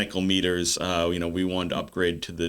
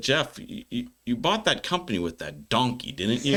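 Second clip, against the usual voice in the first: put-on big, laid-on Texan accent with swooping pitch; 5 semitones higher than usual. Retelling what a Texan man at a conference said, big Texas accent. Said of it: "his big Texas accent".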